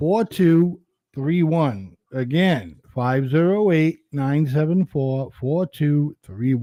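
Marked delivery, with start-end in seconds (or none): 0.0-2.0 slow, careful, deliberate, digit-by-digit reading. Reading a phone number to a co-host writing it down, saying it a little slower. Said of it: "say that number a little bit slower".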